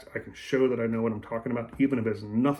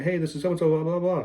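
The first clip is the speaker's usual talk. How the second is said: rattled-off, rapid, pitched-up delivery; 6 semitones higher than usual. Explaining how to match someone's voicemail style, demonstrate a greeting talking really fast. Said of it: "if they talk really fast".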